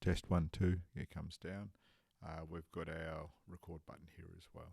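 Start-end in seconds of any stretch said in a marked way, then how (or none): 0.0-0.8 very loud, raised voice. Demonstrating the recording's audio meter while speaking: louder. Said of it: "as I speak louder".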